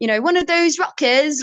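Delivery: put-on English accent. Songwriter recalling a rocker boyfriend in england: english accent. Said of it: "Like that's my English accent".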